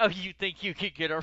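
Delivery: ordinary delivery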